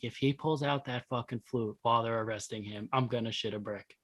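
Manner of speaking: soft, hushed half-whisper. Retelling half-whispering to friends during an arrest: retelling a half-whisper. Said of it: "I'm whispering to them".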